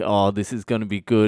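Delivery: ordinary talk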